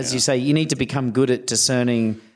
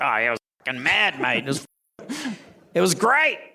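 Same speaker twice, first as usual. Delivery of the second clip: put-on Australian voice, higher pitched; 4 semitones higher than usual. Retelling what the stunt coordinator says about a stunt gone wrong: imitating Chris Anders. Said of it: "he's like".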